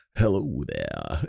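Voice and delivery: creaky, raspy, welcoming voice. Imitating the company commercial's welcoming voice: George Takei voice. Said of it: "almost like a George Takei".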